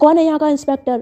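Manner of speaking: mock-angry shouting. Narrating a story, acting out a man shouting at the police station: retelling an angry shout. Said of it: "वो गुस्से में चिल्लाते हैं".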